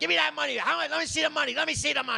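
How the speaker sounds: very high, shrill, raspy, rough screaming. Retelling a woman screaming at a man over what he paid a comedian; retelling a woman screaming. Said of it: "And she's screaming".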